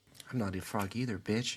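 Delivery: muttered, hushed half-whisper under the breath. Voicing a pixie muttering an insult as someone walks away: half-whispered under her breath. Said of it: "you hear whispered under her breath".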